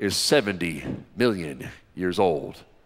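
mock very low, hushed, sanctimonious intoning tone. Retelling a curator's words to the audience, mocking a sanctimonious voice. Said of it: "They always use that sanctimonious voice".

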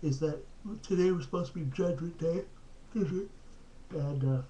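talking through a yawn. Late-night video update after a long day, talking through a yawn. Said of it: "sorry, I'm yawning".

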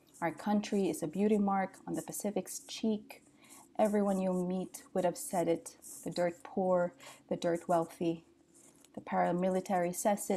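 ordinary talk

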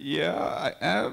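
put-on, very nervous voice. Retelling answering a kid who asked if programmer: imitating own nervous reply. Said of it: "very nervously".

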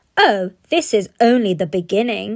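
loud, dismissive scoffing. Narrator reading Bradley answering his father's question, scoffing. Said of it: "scoffed Bradley".

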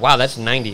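ordinary talk

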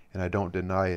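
ordinary delivery

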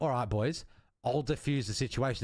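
normal talking voice

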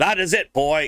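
exasperated shouting. A teacher, mocked by a boy waggling his finger back, finally snaps: yelling. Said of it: "she yells".

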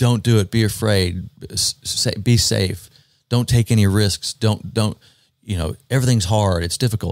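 ordinary talk

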